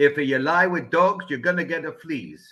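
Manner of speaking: put-on very thick Italian accent. Retelling what his mentor's grandfather said, in a thick Italian accent. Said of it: "in a very thick Italian accent".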